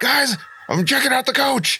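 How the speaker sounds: shouting. Player speaks in character to the group, yelling. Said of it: "Stop yelling".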